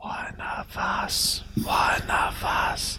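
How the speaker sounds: very slow, hushed whisper under the breath. Voicing a waiter as another character leaves the kitchen: whispering under breath. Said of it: "whispers under his breath".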